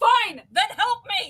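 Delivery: shrill, very high-pitched scream. Narrating a scene aloud, voicing Julian as he screams out. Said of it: "and he screams out".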